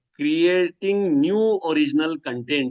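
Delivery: slow, heavy stress on "new" and "original". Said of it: "emphasizing the word new and original".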